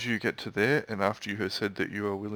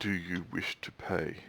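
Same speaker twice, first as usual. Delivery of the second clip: demonic voice, quieter; 3 semitones lower, 6 dB quieter than usual. Voicing a demon face on a door, asking an approaching player: demon face voice. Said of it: "The voice ... of the demon face will say to you".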